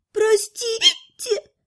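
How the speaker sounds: tiny, very high, frightened squeak. Lana, hissed at by the magister, apologizes with a frightened squeak. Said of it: "пискнула девушка со страхом".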